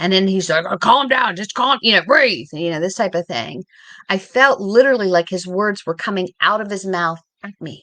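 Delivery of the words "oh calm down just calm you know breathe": rough, booming, loud and raspy voice. Retelling the husband trying to calm her during an anxiety attack: Jeff's loud, raspy voice. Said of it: "he's got this loud, raspy voice".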